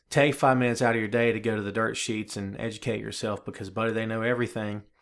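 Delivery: ordinary delivery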